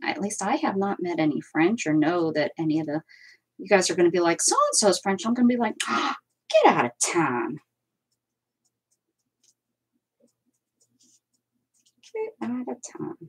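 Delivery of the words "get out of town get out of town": put-on, sing-song Pittsburgh accent. Imagining a reply when told someone is French, in a Pittsburgh accent. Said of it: "How's that for my Pittsburgh accent?".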